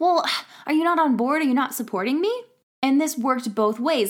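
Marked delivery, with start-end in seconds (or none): 0.0-2.4 mock slightly mad, annoyed and challenging, pitched up. Recounting how she reacted when he didn't keep up, acting out getting a bit mad. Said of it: "I would get a little bit mad".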